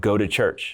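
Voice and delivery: play-acted severe, super stern, no-nonsense tone. Retelling an audible voice heard while praying: imitating a stern command. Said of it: "Super stern".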